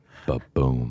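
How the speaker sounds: acted sighing reply. Retelling an agent's answer on a call: imitating a long sigh before speaking. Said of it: "long sigh".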